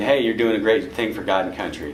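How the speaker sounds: usual speaking voice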